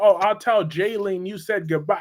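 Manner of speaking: ordinary talk, nothing marked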